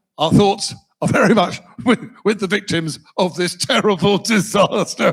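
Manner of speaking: acted, words broken up by laughter mid-sentence. Imagining a disaster statement, laughing through it: imitating Farage laughing mid-sentence. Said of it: "He'd be a terrible prime minister".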